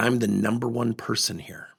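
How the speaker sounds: ordinary talk, nothing marked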